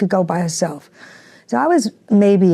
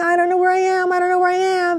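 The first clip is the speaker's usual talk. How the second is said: sobbing, crying scream, very high pitched; 12 semitones higher than usual. Retelling getting lost as a child, retelling crying and screaming. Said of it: "I started crying and screaming".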